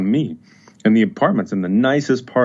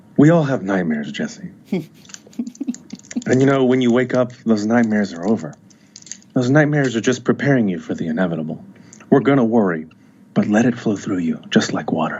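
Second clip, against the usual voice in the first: seductive, coaxing voice. A doctor answering someone who has nightmares about dying, seductive voice. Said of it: "now it sounds like you're trying to seduce me".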